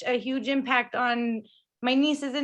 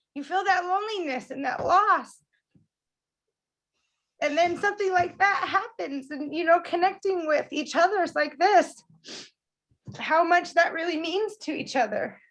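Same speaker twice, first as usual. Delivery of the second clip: moved, heartfelt, emotional voice with pitch raised; 5 semitones higher than usual. Sharing thanks and feelings with the group: emotional. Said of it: "So sorry, I'm always emotional".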